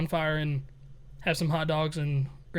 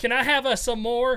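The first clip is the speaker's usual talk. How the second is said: put-on little kid voice, higher; 7 semitones higher than usual. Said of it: "I sound like I'm fucking three years old".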